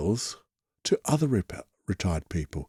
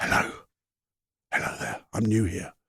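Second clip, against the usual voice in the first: very quiet, hushed whisper; 4 dB quieter than usual. Showing how to greet people quietly in a library: whispering. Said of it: "Shh, whisper".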